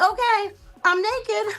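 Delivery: high, breezy, offhand voice.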